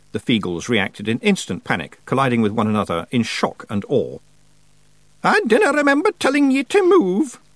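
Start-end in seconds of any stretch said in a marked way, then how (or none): 5.2-7.3 shrill witch's shout, pitched way up high. Narrator reads a woman scolding a panicking crowd, shouting with a horrible grin. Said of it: "shouted Miss Treason, grinning horribly".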